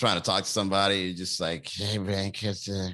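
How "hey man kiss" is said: mock drunk slurring, lower and quieter. Describing trying to talk to someone while too drunk: imitating slurred drunk speech. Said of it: "you're slurring your words".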